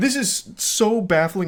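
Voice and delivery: high voice, cracking and breaking mid-phrase. Reacting to a man's texts to a woman, voice cracking. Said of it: "it's making my voice crack".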